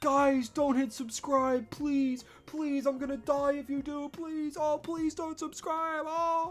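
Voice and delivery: mock, high, pleading begging voice. Imitating one person on a live stream begging viewers: imitating a streamer begging. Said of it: "sit there and watch this one person just go".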